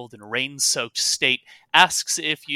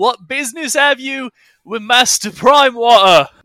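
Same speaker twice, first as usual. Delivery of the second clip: very loud, high-pitched shout; 11 semitones higher, 9 dB louder than usual. A rain-soaked guard challenges visitors, shouting over the rain. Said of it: "as he shouts over the rain".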